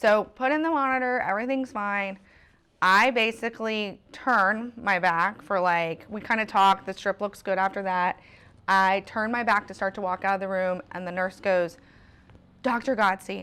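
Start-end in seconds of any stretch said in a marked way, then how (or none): 12.6-13.4 put-on alarmed, urgent voice. Retelling how a nurse called out to the doctor: imitating an alarmed nurse. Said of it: "in this voice that was so, ... a voice that says, "Something's wrong."".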